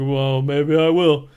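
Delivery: defiant, in-character delivery. Retelling a movie scene where John answers his girlfriend: John impression. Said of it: "That was a perfect, uh, impression".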